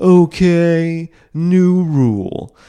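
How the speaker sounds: loud, high comic announcing tone, okay stretched out. Mocking a comedian's views on guns: Bill Maher impression. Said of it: "that's my Bill Maher impression".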